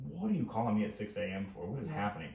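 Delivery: plain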